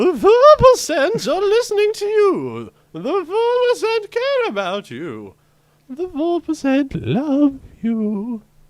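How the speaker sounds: eerie, sinister, very high and loud voice. Reading a passage announced as to be read creepily: creepy voice. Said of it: "The following is to be read in a creepy voice".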